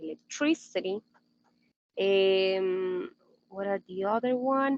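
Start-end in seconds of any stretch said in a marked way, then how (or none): 0.0-1.0 electricity, stress placed on third syllable tri. Explaining word stress with an example word: stress on TRI in electricity. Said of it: "electricity is in the three syllable".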